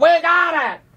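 play-acted very high-pitched shout, sounding distant. Retelling how the doctor called from down the hall: imitating a scream. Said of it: "the doctor screams from like down the hall".

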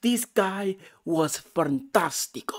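put-on Spanish or Italian accent. Raving about a movie and the guy in it, slipping into a Spanish or Italian accent. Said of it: "I got into the Spanish or Italian accent".

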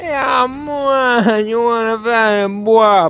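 bad put-on Jamaican accent. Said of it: "That's my awful [name] impression".

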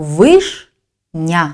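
"вишня" broken into its two syllables, slow.

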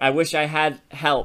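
ordinary talk

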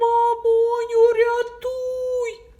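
very loud, high, frightened wailing cry. Reading a children's story aloud, the fox calls out to its mother: wailing for help. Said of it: "Заволала і зникла".

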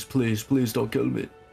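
mock screaming, pleading. Explaining a game quest, acting out a character's screamed plea at the top of his lungs. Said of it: "literally screaming at the top of his lungs".

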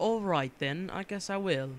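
badly done put-on British accent. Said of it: "I'm really bad at British accents".

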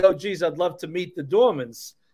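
ordinary talk, nothing marked

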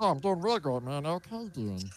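made-up character voice, high with swinging pitch. Greeting the others on stream as Meatwad: Meatwad voice. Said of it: "Can Meatwad say he's doing great too?".

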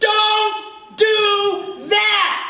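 piercing, shrill, very high scream, acted out. Acting out an inner voice that warns, imitating a voice screaming. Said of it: "that voice is like screaming in my ear".

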